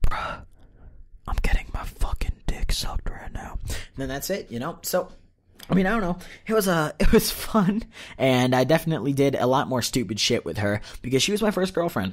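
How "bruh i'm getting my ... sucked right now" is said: hushed whisper, close against the ear. Retelling what a guy whispered into your ear, whispering. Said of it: "he whispers into your ear".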